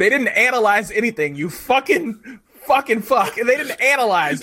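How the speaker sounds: shrill, very high, loud, furious, worked-up rant. Speaker rants at another person's choice of word; triggered angry rant. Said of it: "I'm so triggered".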